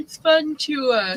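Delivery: very high, slow words spoken through a yawn. Talking to the audience after stepping out for water, speaking through a yawn. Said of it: "sorry, I'm yawning".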